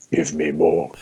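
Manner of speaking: very deep, low voice, dropped all the way down. Joking about who will ask for more figures: Darth Vader voice. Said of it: "That'll be Darth Vader".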